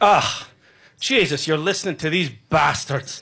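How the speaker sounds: put-on Irish-accented voice with brogue. Retelling what the speaker's dad said, with his brogue. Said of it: "with his brogue".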